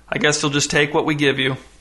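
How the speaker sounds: plain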